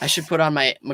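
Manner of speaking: plain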